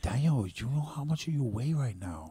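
timid, careful, meek, mild voice. Quoting his doctor friend speaking to him, clipboard in hand: imitating a meek voice. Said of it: "very meek with her clipboard".

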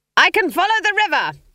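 very high, shrill screaming cry. Riding a smoking broomstick, she answers a roared question, screaming over the flames. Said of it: "Granny Weatherwax screamed above the crackle of flames".

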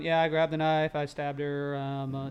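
purposely deadpan flat monotone, no inflection, "her" drawn out. Imitating how a movie reads a real transcript aloud, in a flat monotone. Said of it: "super like purposely very very monotone".

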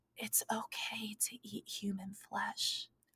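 gentle, very soft, slow, unhurried whisper. Acting out a man leaning in close to the listener, imitating a gentle whisper. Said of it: "he just whispers to you so gently".

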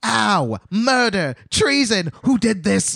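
shrill, very high screaming character voice. Retelling a story, the speaker acts out the knocked-over Gnome King: Gnome King screaming. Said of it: "he's just screaming with his little fat body".

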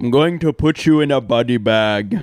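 put-on Russian accent attempt. Asked to do a Russian accent for Drago, threatening Rocky in an attempted Russian accent. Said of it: "However you do a Russian accent".

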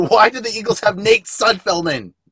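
very high, loud, shrieking screaming yell. Retelling a friend's question while watching the game: imitating someone screaming. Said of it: "he's sitting there screaming at me".

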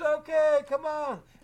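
high, loud holler. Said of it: "I hollered back".

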